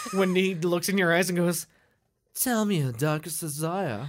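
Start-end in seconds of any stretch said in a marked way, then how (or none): 2.3-4.1 put-on, deliberately bad British accent. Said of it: "That's my British accent".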